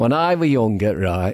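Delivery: affected, put-on Northern English accent. Performer starting a story about his school days; put-on Northern English accent. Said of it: "affect Northern accent".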